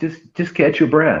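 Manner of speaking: put-on sweetest tone. Quoting what he says while patting the speaker's back, imitating a sweet tone. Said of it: "he says it to me in the sweetest tone".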